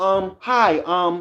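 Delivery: high, hesitant, stammering, um-filled put-on professional phone voice. Imitating a sister's hesitant phone voice: imitating sister's put-on phone voice. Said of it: "that tone of voice, that's not her own".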